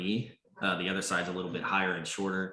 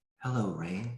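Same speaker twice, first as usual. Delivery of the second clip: airy, otherworldly whispered voice. A being lands before rain and greets rain: ethereal whispering voice. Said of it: "whispering voice, she says".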